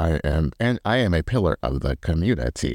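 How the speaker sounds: put-on robot voice. Joking that she talks like a robot, imitating Angie's robot voice. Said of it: "she talks like a robot".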